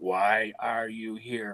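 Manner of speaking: deep, gravelly, hushed demonic voice, tape-recorded sound. Speaker recalls a voice heard on a tape played backwards, in a deep, gravelly voice. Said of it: "in a deep, gravelly voice".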